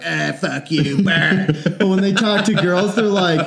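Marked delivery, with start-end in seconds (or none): 0.0-1.5 very drawn-out, rough, creaky bro voice. Imitating how dudes talk to friends on the phone: imitating dudes talking to their friends. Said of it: "dudes, when they're on the phone and they're talking to their friends, they're like".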